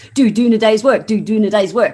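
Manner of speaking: fast, loud, rattled-off speech. Showing how to say the next episode's title fast: said fast. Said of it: "Go and say that fast".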